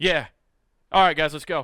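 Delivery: put-on indifferent, flat voice. Retelling how the other speaker reacted after the accident: imitating Nathan, very matter of fact. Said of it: "This is very matter of fact".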